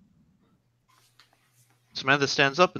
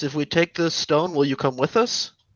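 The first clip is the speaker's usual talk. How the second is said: normal talking voice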